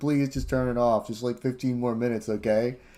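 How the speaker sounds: weepy, tearful, pleading tone. Retelling a video where a mother begs her son: imitating a crying mother. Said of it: "crying on the computer".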